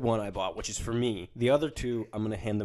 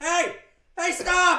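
mock screaming, much higher, louder; 7 dB louder than usual. Recounting trying to get a shot of a deer, retelling a scream. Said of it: "I eventually just started screaming".

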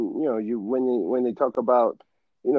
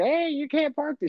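very high put-on old lady granny voice. Acting out an old lady scolding someone for parking: imitating an old lady. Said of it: "the old lady's like".

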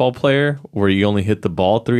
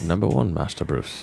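bad put-on voice, very low and rough; 7 semitones lower, 7 dB quieter than usual. Answering a segment intro in a horrible Michael Caine impression. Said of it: "my horrible Michael Caine impression".

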